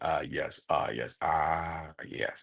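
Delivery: very soft, very slow, deep, hushed, drawn-out voice. Speaker demonstrating how to find a voice by repeating a phrase, deep register voice. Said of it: "thinking of a deep register voice".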